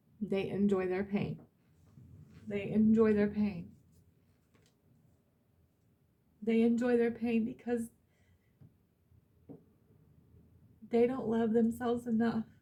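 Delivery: voice fighting back tears. Speaking about others without wanting to judge them: trying not to cry. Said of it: "I'm trying not to cry".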